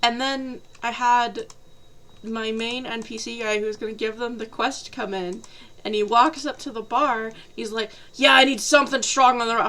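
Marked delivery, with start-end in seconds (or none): 8.1-9.7 quick, a little pushy, mildly belligerent and combative. Retelling the main NPC walking up to the bar to order, retelling a slightly belligerent demand. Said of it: "And he's a little belligerent".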